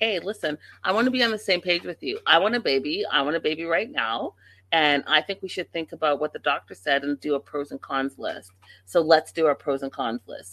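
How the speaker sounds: ordinary delivery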